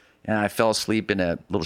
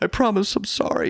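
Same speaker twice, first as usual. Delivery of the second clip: very high, tearful, crying, pleading voice. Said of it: "and I was like".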